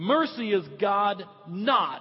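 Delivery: "not" stressed hard.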